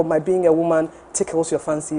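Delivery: ordinary talk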